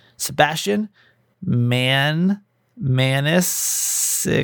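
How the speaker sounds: very slow, drawn-out syllables of the word. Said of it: "I gotta say that slowly".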